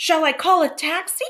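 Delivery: very high-pitched, shocked, startled, alarmed tone. Mrs. Hunt to Mr. Johnson as he sways at the door, shocked tone. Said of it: "said Mrs. Hunt in a shocked tone".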